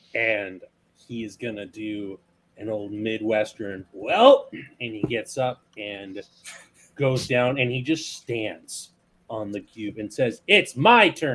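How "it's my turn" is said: bold, booming, loud, high-pitched voice. Narrating a character who stands on the cube and announces, said really loudly. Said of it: "really loudly".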